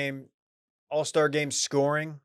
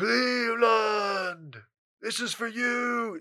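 very slow, drawn-out, pitched-up declaration; 8 semitones higher, 3 dB quieter than usual. Quoting a basketball star after his first title: LeBron James impression. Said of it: "a really good LeBron impression".

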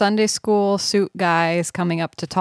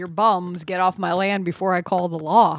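plain

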